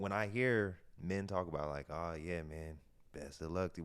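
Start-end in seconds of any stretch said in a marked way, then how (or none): 1.9-3.8 put-on somber voice, quieter. Speaker mimics how men talk about someone's relationship, imitating a somber voice. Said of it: "with like this somber voice".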